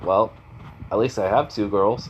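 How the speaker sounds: plain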